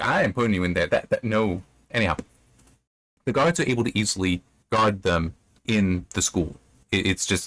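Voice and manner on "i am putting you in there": ordinary talk, nothing marked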